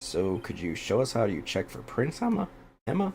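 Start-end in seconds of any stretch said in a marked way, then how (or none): 2.2-3.1 very high, squeaky, cracking voice break. Asking a companion to demonstrate checking prints, voice cracking. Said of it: "Sorry, voice crack".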